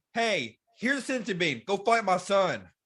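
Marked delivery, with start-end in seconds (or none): none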